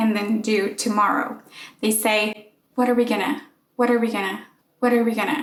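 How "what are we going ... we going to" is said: "going to" said fast, reduced to "gonna". Speaker demonstrates how people link the first words: fast reduced speech. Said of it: "they actually say it faster".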